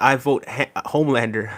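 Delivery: ordinary delivery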